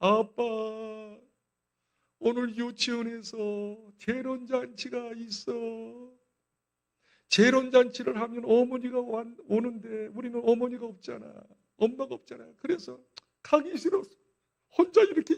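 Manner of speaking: put-on child voice, speaking through tears.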